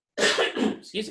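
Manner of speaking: slow, whispery voice that gives out.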